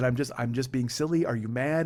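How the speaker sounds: normal talking voice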